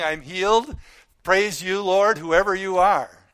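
loud, ecstatic, joyful scream. Picturing a healed man coming back to praise God, imitating him screaming. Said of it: "this guy screaming".

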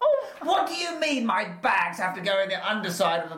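high-pitched, rude-sounding voice. Acting out a rude traveller arguing with airline staff: high-pitched King Midas voice. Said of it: "High pitch".

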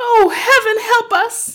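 very shrill, very loud, high frightened cry. Reading the mother's reply after the girl says it's a ghost: cried out. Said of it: "cried the mother".

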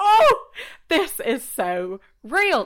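high, loud, delighted laugh stretching into slow gush.

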